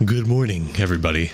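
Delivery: low, dropped, deep put-on voice. Greeting everybody at the start, in a deep voice. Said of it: "I don't know why I went a deep voice".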